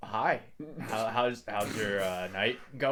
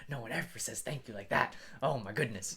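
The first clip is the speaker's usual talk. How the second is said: soft mutter under the breath, to himself; 6 dB quieter than usual. Narrating a character who walks away after being thanked, muttering under his breath. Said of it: "you kind of hear him mutter under his breath".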